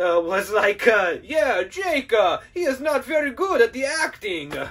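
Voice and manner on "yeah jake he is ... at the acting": put-on fake Italian accent, slower. Mocking the film's director talking about the actor jake, mock italian accent. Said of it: "Maybe I shouldn't have done that accent".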